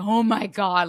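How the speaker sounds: loud, play-acted, orgasmic, over-the-moon ecstatic delight. Acting out a dieter's first bite of cake: imitating orgasmic delight.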